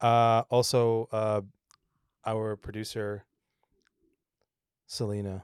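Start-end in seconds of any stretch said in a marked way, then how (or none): 2.3-5.4 disappointed, let-down tone, quieter. Introducing the producer to listeners: disappointed tone. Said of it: "Why did you sound so disappointed".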